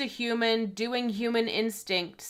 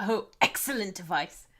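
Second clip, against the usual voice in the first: bad, terrible, put-on British accent; 3 semitones lower than usual. Speaker reacts to their own remark about royals, in a terrible British accent. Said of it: "I said that in a terrible British accent".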